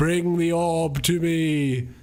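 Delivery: very slow, drawn-out, nagging tone. Complaining about a game quest, imitating a nagging voice in your ear. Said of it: "this bitch in your ear the entire fucking game being like".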